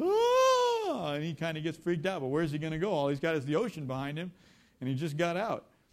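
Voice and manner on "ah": loud, high yelling.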